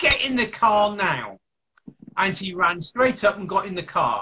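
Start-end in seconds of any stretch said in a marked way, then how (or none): 0.0-1.4 drawn-out, slow, deliberate, called out. Recounting yelling to her from the open car boot, retelling a yell. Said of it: "I yelled out to her".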